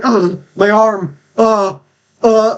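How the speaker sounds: very slow, high, drawn-out pained groan. Voicing a man whose arm was just broken: NPC in pain. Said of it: "break his arm a bit as well".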